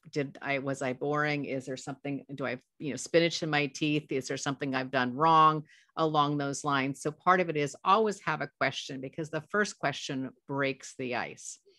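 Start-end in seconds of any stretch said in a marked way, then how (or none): none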